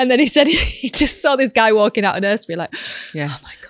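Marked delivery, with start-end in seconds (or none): 2.7-3.7 breathy, half-whispered, hushed relieved sigh and exhale. Retelling a man seeing another parent leave nursery, acting out relief. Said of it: "Just that relief".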